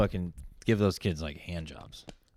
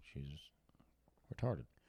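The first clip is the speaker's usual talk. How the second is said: whispered, very quiet, hushed, barely audible; 7 semitones lower, 17 dB quieter than usual. Telling the other speaker about an aunt they never met, whispering. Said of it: "You're whispering as if".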